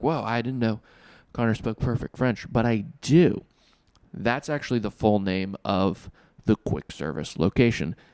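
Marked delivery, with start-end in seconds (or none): none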